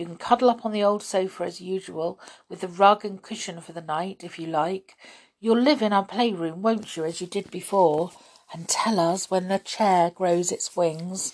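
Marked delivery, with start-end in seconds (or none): none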